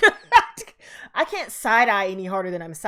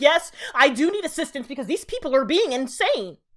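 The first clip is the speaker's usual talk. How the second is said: irritating, mocking, pitched-up tone of voice; 7 semitones higher than usual. Mocking people who do dumb things and ask for help: mocking imitation of a hated tone. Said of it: "that tone of voice that I absolutely fucking hate".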